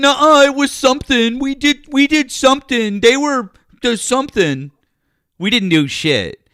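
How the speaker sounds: mocking childish voice. Mocking another speaker's arguments: mocking imitation of opponent. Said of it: "That's literally what you sound like".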